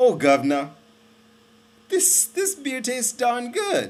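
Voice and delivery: very high, swooping, badly done put-on English accent. Telling how the English reacted to the beer reaching India: bad English accent. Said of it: "Excuse my bad accent".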